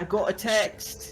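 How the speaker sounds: high, slow, loud scream with British accent.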